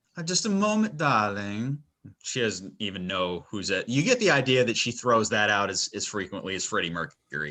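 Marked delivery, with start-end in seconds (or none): 0.2-1.9 high, pitched-up, fabulous flamboyant madam voice. Voicing a madam answering the door: Fabulous Edna voice. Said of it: "Remind me of, like, a stupid Fabulous Edna".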